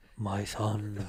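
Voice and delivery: put-on Korean deity voice. Asked by a friend to do Korean God: Korean God voice. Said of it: "Do Korean God".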